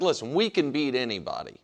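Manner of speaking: ordinary delivery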